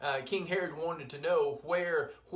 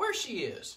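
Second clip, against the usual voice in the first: put-on small, sweet, innocent child's voice; 4 semitones higher than usual. Retelling what she asked in the video, imitating a sweet, innocent little voice. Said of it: "In that little sweet, innocent voice".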